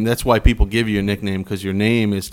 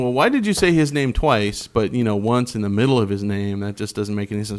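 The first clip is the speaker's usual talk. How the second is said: usual speaking voice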